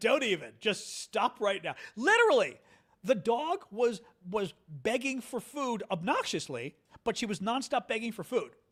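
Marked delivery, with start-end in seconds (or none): 0.0-1.7 angry, pissed-off tone. Speaker re-enacts what they told a woman, retelling own angry words. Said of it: "I was pissed".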